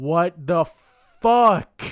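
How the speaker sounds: furious, very loud, angry scream. Recalling getting so mad, re-enacting own angry scream. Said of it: "and I just screamed".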